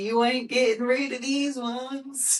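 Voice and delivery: imitated strong Southern accent. Retelling what the wife said at the pickup: imitating a strong Southern accent. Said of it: "the most, like, Southern accent you can, you can think of".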